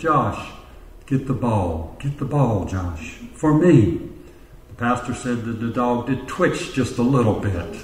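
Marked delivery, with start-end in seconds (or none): 0.0-4.1 put-on sultry woman's voice, lower and slower. Telling a story, the speaker quotes a woman calling the dog, imitating a sultry voice. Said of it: "in a very sultry voice said".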